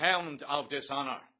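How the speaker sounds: booming bellow, full and loud. Narrator reads a character's retort to Bloom; baritone voice. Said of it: "in a baritone voice".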